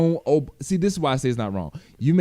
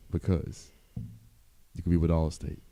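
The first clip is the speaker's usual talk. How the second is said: put-on commercial voiceover voice, lower and quieter; 7 semitones lower, 8 dB quieter than usual. Doing a mock insurance ad: Allstate commercial voice. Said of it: "The Allstate voice".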